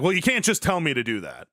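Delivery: mock, very angry delivery. Retelling how they used to react when told what to do: imitating own past angry self. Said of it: "I used to be very angry and be like".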